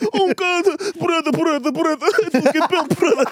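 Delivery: put-on high whine. Mocking a fighter who complained during fights, in a whining Ankalaev impression. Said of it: "He was just whining, just complaining".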